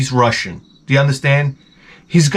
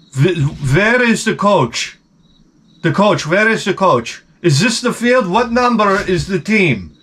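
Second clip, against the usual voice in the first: brash, demanding alpha-male voice; 5 semitones higher than usual. Retelling another father's questions about the coach: imitating an alpha male. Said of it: "he comes up like real alpha male".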